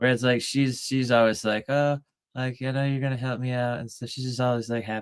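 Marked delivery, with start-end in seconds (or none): 1.7-3.8 cheerful, sugary, sweet cat-like pet voice. Imitating the girl cat expecting help: imitating a happy sweet cat. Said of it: "happy and sweet".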